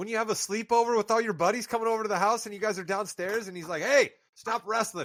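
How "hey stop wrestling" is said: acted fatherly yelling. Retelling how a dad tells the kids downstairs to stop: imitating a dad yelling. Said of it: "he just yells it from the top of the stairs".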